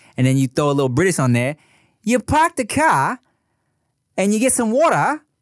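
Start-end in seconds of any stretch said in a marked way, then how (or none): 2.1-5.2 very high, fake Australian accent. Demonstrating how a Boston accent turns into an Australian one, Australian accent. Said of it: "and now you're in Australia".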